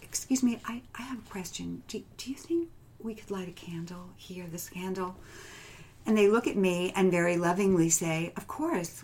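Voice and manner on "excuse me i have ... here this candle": tiny, soft, small voice. Retelling asking the group at the next week's meeting, in a little voice. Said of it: "So it was in this little voice".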